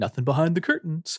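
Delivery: high-pitched, patronizing, condescending reassuring tone. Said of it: "patronizingly being like".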